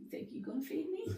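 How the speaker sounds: high, soft dog character voice.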